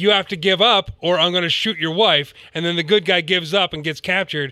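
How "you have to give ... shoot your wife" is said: normal talking voice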